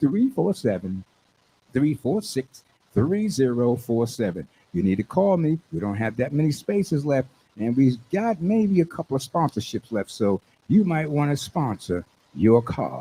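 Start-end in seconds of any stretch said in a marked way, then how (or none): 0.0-4.5 slower, careful delivery. A host repeating the phone number for callers, slowed down. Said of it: "Let me slow that number down".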